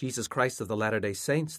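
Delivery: ordinary delivery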